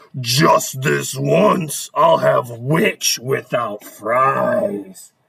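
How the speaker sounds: very deep dragon voice, "fries" stretched out. Reading a rhyming story aloud, the narrator speaks the dragon's line in a dragon voice. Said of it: "The dragon drew near with a glint in his eyes and said".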